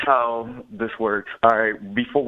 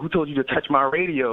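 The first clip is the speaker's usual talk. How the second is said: mock cross, accusing, pissed-off grandma voice; 3 semitones higher than usual. Telling a story, the speaker imitates their grandma walking in on them, imitating angry grandma. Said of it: "Like all pissed off at me".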